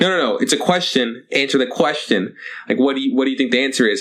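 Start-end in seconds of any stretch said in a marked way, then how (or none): none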